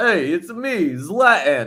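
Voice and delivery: slow, swooping, drawled Brooklyn street accent. Inventing a new voice for a footballer: Brooklyn street talk Zlatan voice. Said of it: "Like a Brooklyn".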